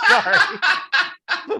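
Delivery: high, loud speech while laughing.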